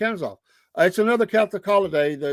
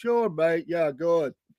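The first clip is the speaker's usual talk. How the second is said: put-on English accent, thrown on; 3 dB quieter than usual. Retelling how a man who wasn't English answered a guy, in fake English accent. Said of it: "he would throw the English accent".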